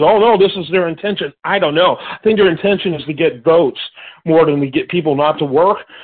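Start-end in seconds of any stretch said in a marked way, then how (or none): none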